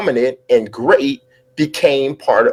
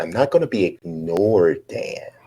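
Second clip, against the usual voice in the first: soft, slow delivery, each word weighted; 7 semitones lower, 7 dB quieter than usual. Speaker repeats the listener's remark back, doing a Glenn Close Fatal Attraction impression. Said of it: "sounded like Glenn Close in Fatal Attraction when you said".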